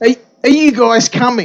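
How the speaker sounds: impatient, somewhat angry tone. Retelling how a man at the front of the train turned to them: retelling an impatient, angry tone. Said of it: "In this really impatient, kind of angry tone".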